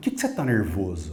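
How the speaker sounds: put-on brusque, coarse, harsh, rude tone. Speaker retells a man's reply to the speaker, imitating a harsh, rude tone. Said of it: "bem ríspido, bem grosso".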